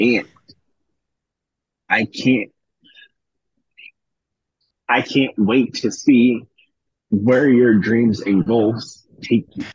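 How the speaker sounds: choked up, holding back tears. Telling the other speaker on his birthday you're proud: choked up. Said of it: "I'm trying not to get choked up".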